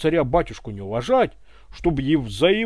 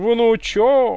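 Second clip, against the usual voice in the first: high, mocking, stretched-out sarcastic drawl; 6 semitones higher, 4 dB louder than usual. A colonel, not believing the other man's story about his grandmother, drawling sarcastically. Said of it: "язвительно протянул полковник".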